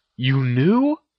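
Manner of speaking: stunned, incredulous, can't-believe-it disbelief. Narrating a story, voicing Harry's reply to Ginny: in disbelief. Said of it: "He asked in disbelief".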